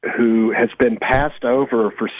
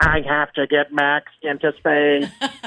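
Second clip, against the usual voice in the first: flat, monotone, droning robot voice; 4 semitones higher than usual. Summarizing a story, the speaker does the robot's line: Jinx robot voice. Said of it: "the robot talks like this".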